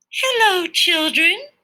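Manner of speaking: sweet, very high voice. Reading a story aloud, a teacher greets the children: sweet voice. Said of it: "someone said in a sweet voice".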